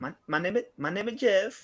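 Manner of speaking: put-on Mexican accent, pitched way up. Recalling a movie scene in conversation, Mexican accent from 21 Jump Street. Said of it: "Mexican accent and he's like".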